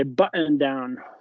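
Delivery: put-on English accent. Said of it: "are you doing, like, an English accent now?".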